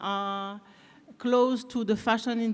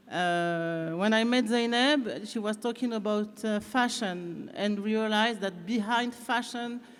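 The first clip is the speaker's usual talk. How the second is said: English with a little French accent. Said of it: "avec un petit accent français".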